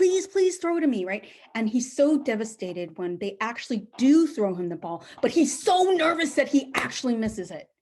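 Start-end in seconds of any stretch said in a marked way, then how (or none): 0.0-1.0 put-on high, loud, pleading child's voice. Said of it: "he's, like, begging for them".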